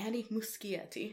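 name pronounced the Italian way, Italian-style accent. Naming a film's director, pronounced with an Italian accent. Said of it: "Which I'm saying with a kind of like an Italian accent".

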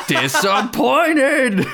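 put-on sudden one-word yell, very high, swooping. Retelling a movie line where a character just yells: imitating someone yelling. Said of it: "where he just yells".

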